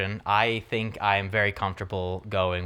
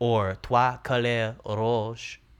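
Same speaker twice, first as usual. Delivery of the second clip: slight put-on French accent; 3 semitones higher than usual. Announcing the next film title in a put-on French accent: put-on French accent. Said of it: "You like that little accent there?".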